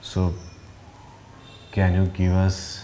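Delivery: low slow pleading voice.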